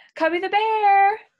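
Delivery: big-voiced, high, loud call-out. Calling out to Cubby the Bear with the kids: calling out really loud. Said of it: "we're gonna say it really, really loud".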